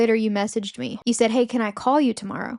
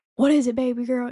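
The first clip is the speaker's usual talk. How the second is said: put-on panicked, freaked-out voice; 2 semitones higher than usual. Daughter retelling telling her dad she has a date, imitating Dad freaking out. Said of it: "like freaking out".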